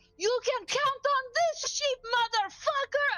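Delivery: very high, shrill, yelled battle cry. A player describes their character throwing pocket sand and shouting: shouting. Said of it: "and I'm gonna shout".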